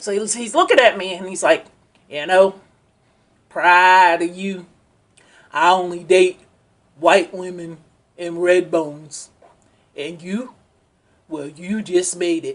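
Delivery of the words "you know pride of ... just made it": put-on heavy country accent, deep voice. Retelling what a man told you about his preferences, imitating a heavy country accent. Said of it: "I'm going to just imitate it".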